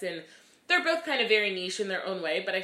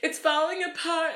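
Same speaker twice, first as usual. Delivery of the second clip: mock high, tearful crying voice; 10 semitones higher, 4 dB louder than usual. Retelling a tearful phone call with the director: retelling own crying words. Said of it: "and I was crying".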